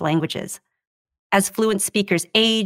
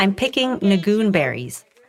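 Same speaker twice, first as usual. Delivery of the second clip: plain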